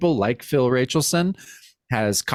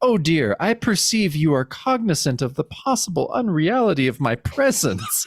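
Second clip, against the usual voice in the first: put-on fancy, erudite, highbrow voice. Voicing Baphomet from a comic panel: fancy erudite Baphomet voice. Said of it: "very fancy and e-, erudite a little bit".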